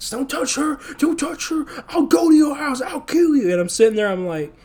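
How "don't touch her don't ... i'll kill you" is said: acted-out dry, raspy yell, very high. Retelling a man yelling at the guard, retelling a raspy yell. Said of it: "he just starts yelling at the guard like".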